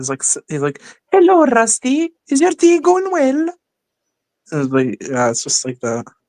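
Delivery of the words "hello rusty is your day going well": put-on very high, childlike voice. Quoting the first character's line from an episode script: Peter Sam voice. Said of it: "my Peter Sam voice".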